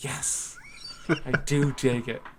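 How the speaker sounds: mock under-breath whisper. Joking about a line once said under the breath: imitating a whisper. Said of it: "I whispered under my breath".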